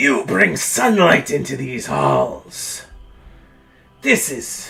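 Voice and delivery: swooping, bestial snarling undead monster voice. Storyteller voicing an ancient undead creature during a fight, snarling voice. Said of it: "He snarls".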